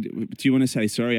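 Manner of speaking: ordinary talk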